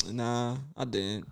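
very quiet, soft, deflated, let-down, disappointed voice. Answering the other host's question, sounding disappointed. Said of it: "you sound disappointed about that".

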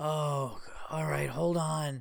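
worried, concerned, kindly tone. Retelling how she answered when he called back, imitating a concerned tone. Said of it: "But like in a concerned way".

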